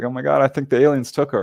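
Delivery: mock sobbing, put-on crying man. Retelling a husband's call about his missing wife, imitating a crying man. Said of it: "He's crying. He's like".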